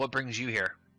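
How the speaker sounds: severe, stern voice. Role-player's character walks up to a stranger and questions him, stern voice. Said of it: "kind of in a you know, stern voice".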